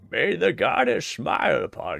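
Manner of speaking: put-on croaking elderly voice. Voicing a game character's line aloud while playing: Master Roshi voice. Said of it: "I decided he sounds like um".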